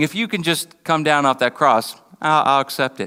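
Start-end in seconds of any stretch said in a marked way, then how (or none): none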